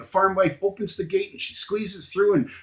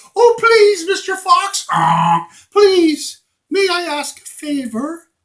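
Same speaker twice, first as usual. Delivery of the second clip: shrill, very high, loud, begging silly goose voice; 11 semitones higher, 9 dB louder than usual. A goose addresses Mister Fox, silly goose voice. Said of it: "a silly Goose".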